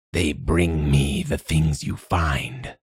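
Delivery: far-off, raspy, rasping announcer-like voice. Narrating a story, voicing a voice that forms out of static: distant and rasping. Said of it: "a distant, rasping voice announces".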